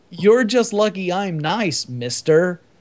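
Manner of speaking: put-on, scoffing, sarcastic and mocking delivery. Repeating a woman's badly written film line, mocking a bad line reading. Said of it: "Who the fuck wrote that line?".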